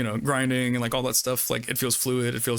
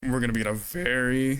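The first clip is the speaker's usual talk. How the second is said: voice breaks while stretching out "very". Predicting how the next console generation will go, voice cracking. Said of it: "my voice crack".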